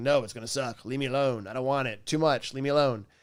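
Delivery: put-on grumpy, cranky old man voice. Explaining the brain's avoid system, acting out a grumpy old man. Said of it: "a grumpy old man in the right front going".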